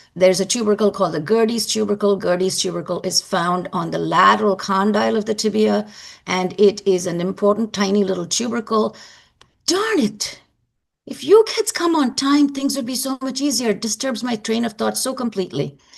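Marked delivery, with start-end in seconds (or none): 9.7-13.7 yelling in frustration. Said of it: "I'm sorry I'm yelling at you".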